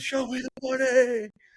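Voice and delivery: screamed, very high and stretched out. Retelling a movie scene where Jerry screams in his office: imitating Jerry screaming. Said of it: "in his office just screaming".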